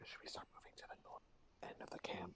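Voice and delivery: hushed conspiratorial whisper. Whispering in character to two companions while watching the camp: whispering. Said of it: "I'm gonna whisper to the other two".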